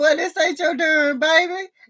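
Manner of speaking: high, put-on sassy voice. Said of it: "Wayne was like".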